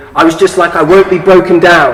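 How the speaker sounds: ordinary talk, nothing marked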